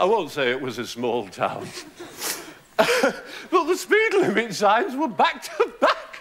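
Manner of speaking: slow delivery, giggling and laughing throughout. Teaching a comedy technique while telling a joke: laughing through the joke. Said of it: "laughing the joke in. You find it so crazy that you can't help laughing at it yourself".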